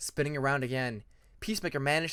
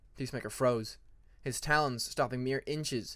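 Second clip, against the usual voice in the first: plain reading voice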